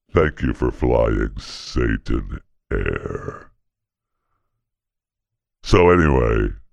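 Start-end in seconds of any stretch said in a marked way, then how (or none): 0.2-3.6 low, deep demonic voice. Addressing passengers on the plane, in a Satan voice. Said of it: "I kind of like the Satan voice".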